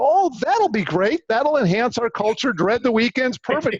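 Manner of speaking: sarcastic tone. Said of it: "My sarcasm".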